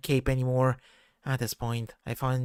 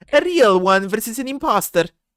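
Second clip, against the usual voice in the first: very loud, high, overdone, bad put-on Italian accent; 9 semitones higher, 9 dB louder than usual. Having just gone Italian though you are not Italian, deliver it as a bad Mario impression. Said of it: "That sounds like a bad impression of Mario".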